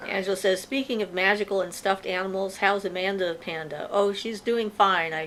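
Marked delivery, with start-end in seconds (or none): none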